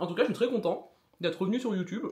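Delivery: talking with mouth full, chewing. Eating a cheese dish while filming: talking with mouth full. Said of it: "C'est pas très poli de manger la bouche pleine".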